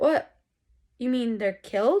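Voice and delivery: put-on stunned, startled, shocked disbelief. Retelling a man's reaction on learning two people have died, mock-shocked. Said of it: "he's shocked by this fact".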